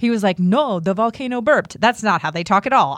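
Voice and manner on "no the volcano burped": put-on clumsy, poor Kenyan accent. Retelling what the resort worker told them, in a bad Kenyan accent impression. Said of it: "my Kenyan impression".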